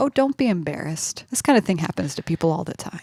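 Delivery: acted, put-on sarcastic tone. Retelling Jonathan's reply to a woman, mock-sarcastic. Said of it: "Jonathan's very sarcastically like".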